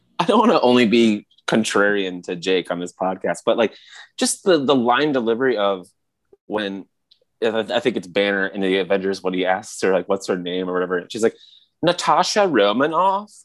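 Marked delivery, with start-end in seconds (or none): 11.8-13.2 put-on thick, heavy California accent, pitched higher. On a podcast, imitate her line delivery when asked her name: Natasha Romanoff, really thick California accent. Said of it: "with this really thick, like, California accent".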